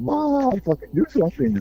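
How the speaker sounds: mock panicked freak-out. Describing a girl who freaks out over the cops, mock panicked freak-out. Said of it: "you just like freak out and just go".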